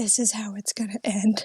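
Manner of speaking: hushed whisper under the breath. Retelling how he leaned over during a movie they'd never seen; whispering. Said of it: "he just whispers to me".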